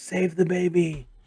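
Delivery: croaky, froggy monster voice, urgent. Recounting the game as Alex attacks, a bullywog shouts: mimicking a bullywog's frog-voiced yell. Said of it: "this bullywog in his native frog voice is yelling".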